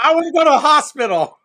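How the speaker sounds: shrill, very high shout. Retelling a crash, hanging upside down in the truck: imitating own past yell. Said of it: "And I just yelled back".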